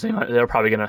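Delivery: voice cracking. Going through teams' first-round picks, the speaker's voice cracking. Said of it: "sorry for the voice crack there".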